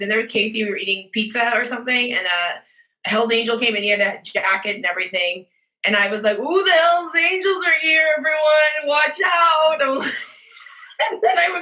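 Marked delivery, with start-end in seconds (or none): 6.4-10.0 put-on drunk voice, higher and slower. Retelling a night at a pizza place, acting out being drunk. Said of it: "I was really drunk".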